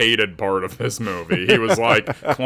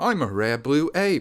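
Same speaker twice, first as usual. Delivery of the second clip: put-on posh British accent, higher and quieter; 4 semitones higher, 4 dB quieter than usual. Imitating a character introducing himself: posh British accent as Hacha. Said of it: "He's got a very posh, uh, British accent".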